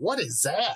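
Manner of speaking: high, sudden, alarmed scream. Retelling what the person they were with screamed on seeing something: imitating a scream. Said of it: "was just screamed".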